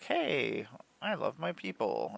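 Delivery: drawn-out sweet cat voice. Describing a sweet cat's mood, voicing the cat. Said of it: "she'll be like".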